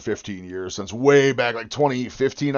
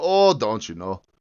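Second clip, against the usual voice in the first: put-on Wisconsin accent. Answering a question about talking like Wisconsin: Wisconsin accent. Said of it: "Talk like Wisconsin?".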